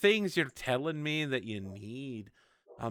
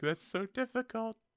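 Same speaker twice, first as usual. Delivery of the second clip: very high voice on the verge of tears; 10 semitones higher than usual. Voicing a player's character who looks about to cry: mock near tears. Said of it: "you look like you're about to cry".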